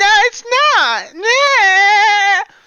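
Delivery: very high, very slow, drawn-out put-on childish kid voice. Imitating people who deny the game is boring: put-on high-pitched kid voice. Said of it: "I can't make my voice high-pitched enough".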